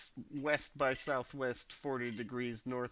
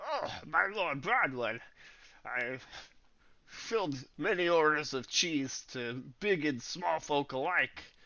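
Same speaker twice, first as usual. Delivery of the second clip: loud words pushed through a full mouth; 4 semitones higher, 6 dB louder than usual. Game master voicing Mister Chester addressing Lord Broadwood, talking while eating cheese. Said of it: "eating cheese while he's talking?".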